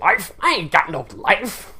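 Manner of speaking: very slow, grumbly, mumbly simpleton voice. Talking about a film, quoting a character's reply in his mumbly, grumbly simpleton voice. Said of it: "his kind of mumbly, grumbly, simpleton voice".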